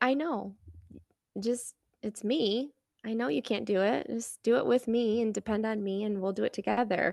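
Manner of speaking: softly spoken, very gentle, tender, reassuring voice. Retelling how God answers her prayer: gently voicing God. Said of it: "God just very gently says".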